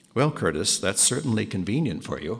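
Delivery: acted-out mock deadpan delivery. Retelling how a brother answered his revelation, retelling a deadpan remark. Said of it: "absolutely deadpan".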